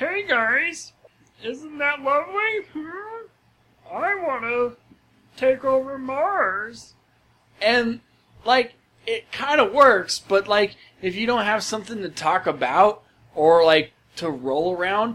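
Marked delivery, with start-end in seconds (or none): 0.0-6.9 high, slow, with "Mars" stretched out. You give an example of how the character talks, in a Marvin the Martian voice. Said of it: "it's Marvin the Martian".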